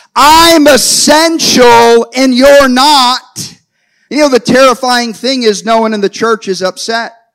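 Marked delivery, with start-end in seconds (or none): 0.2-3.6 deliberate, slow, drawn-out loud giant's shout. Preaching, voicing Goliath calling out over the church: shouting as Goliath. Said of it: "He's shouting from the liquor stores".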